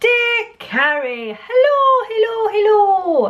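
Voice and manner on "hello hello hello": terrible put-on Irish accent, very high. Opening a letter to Carrie, greeting Carrie in a terrible Irish accent. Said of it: "I don't know why I'm going Irish".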